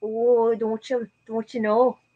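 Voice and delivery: Minnesotan accent. Answering a request to do a Fargo accent, in a Fargo accent. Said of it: "Can you do a Fargo accent?".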